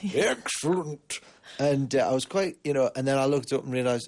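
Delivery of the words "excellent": put-on, silly, high-pitched cartoon character voice. Retelling saying excellent while the mic was on: Mister Bumble voice. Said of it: "I did excellent like that in a sort of a, almost like Mister Bumble".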